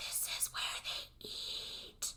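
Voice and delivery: distorted, eerie, slow whispered ghost voice. Retelling a movie scene where someone films the kitchen: distorted ghosty voice. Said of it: "in a weirdly distorted kind of ghosty voice".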